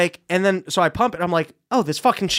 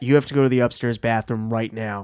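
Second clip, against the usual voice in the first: play-acted dead-serious, pressing, intensely urgent delivery; 9 semitones lower than usual. Retelling how mom came to the table at a family dinner: imitating mom, real intense. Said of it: "real intense".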